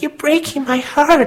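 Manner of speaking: put-on very girly American lilt, pitched way up. Quoting her line from Attack of the Clones, use a very girly American accent. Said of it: "said in a very kind of girly American accent".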